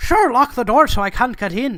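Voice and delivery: put-on loud, belted, flawless Irish accent. In a knock-knock joke, Holmes answers Watson: Holmes in perfect Irish accent. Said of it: "Affecting a perfect Irish accent".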